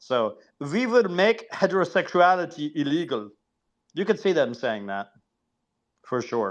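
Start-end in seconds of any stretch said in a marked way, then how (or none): 0.6-3.3 put-on German accent, pitched up higher. Saying a historical line in the speaker's German frame, put-on German accent. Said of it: "I say it in a German accent".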